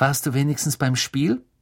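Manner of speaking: plain reading voice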